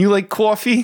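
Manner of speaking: put-on poor Long Island accent. Trading lines in a comedic bit, in a terrible Long Island accent. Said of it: "that was my terrible Long Island accent".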